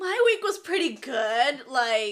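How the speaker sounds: loud shouted yell. Answering a question about how the week went, yelling. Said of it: "you don't have to yell".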